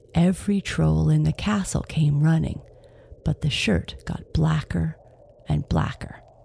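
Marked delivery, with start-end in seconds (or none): none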